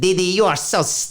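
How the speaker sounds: high put-on cartoon boy voice. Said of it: "He does it".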